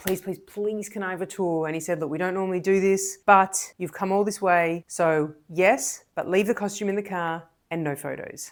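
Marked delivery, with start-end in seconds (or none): 0.0-1.7 acted-out pleading, begging tone. Recounting a visit, the speaker acts out their past self: retelling a plea. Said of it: "So I pleaded".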